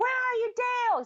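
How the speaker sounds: shrill, very high-pitched screaming yell. Retelling a movie scene where a character yells at an apartment: imitating someone screaming.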